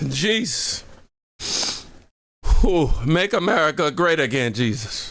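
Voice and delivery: speaking through laughter. Reacting to something funny, barely able to stop: laughing while talking. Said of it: "I'm over here laughing".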